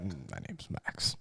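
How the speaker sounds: quiet, low grunted word. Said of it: "He's like".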